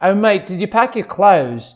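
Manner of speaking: put-on Australian accent. Doing accents, built around the word clothes: australian accent. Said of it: "So my word for my Australian accent is clothes".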